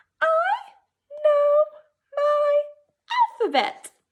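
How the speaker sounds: very high, loud reading voice. Leading a group in reading a sentence aloud: high voice. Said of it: "Let's read it in our high voice".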